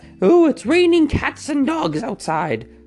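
strange, silly, joking voice, very high pitched. Explaining an idiom nobody uses seriously, the speaker jokes in a weird put-on voice. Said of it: "That was the weirdest voice I've ever done".

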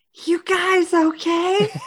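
hushed stage whisper. A character leans her head in at the door, speaking in a stage whisper. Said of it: "in a sage whisper is like".

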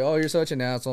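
ordinary delivery

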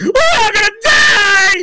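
very high, very loud, drawn-out, terrified scream. Retelling a movie scene where a scientist panics in turbulence: imitating a scared scream. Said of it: "he's screaming at the top of his lungs, all scared".

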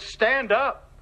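firm, authoritative, stern, commanding voice. Retelling how a man crying on the floor was told to stand: retelling a stern command. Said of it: "in a stern voice".

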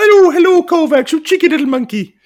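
very high falsetto character voice. Greeting the monkey puppet Kovacs: Mrs Doubtfire voice. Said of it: "I thought I was nailing the Doubtfire impressions".

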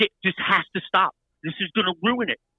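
frantic, urgent, mild half-yell. Speaker retelling a woman screaming at them: retelling her screaming. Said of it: "she's screaming at me".

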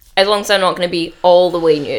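usual speaking voice

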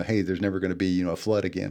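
ordinary delivery

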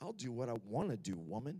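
very low, barely audible, under-the-breath mutter. Recalling walking to their room after being sent there, muttering under their breath. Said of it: "just barely under my breath".

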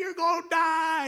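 high-pitched, slow yelling. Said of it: "I'm yelling".

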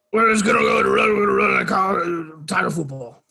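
put-on Cajun coach voice. Asked by a co-host to try one, attempting a Coach O impression. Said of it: "Can you do a Coach O impression?".

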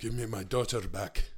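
low voice with a faint hint of Irish. Chatting about a movie, one speaker tries out a line: bad Liam Neeson impression. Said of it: "That's actually not a good Liam".

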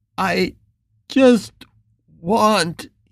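broken, trembling stammer through tears. Reading a man answering the one threatening him, stammering. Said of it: "he stammered".

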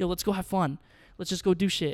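ordinary delivery

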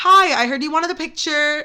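ordinary talk, nothing marked

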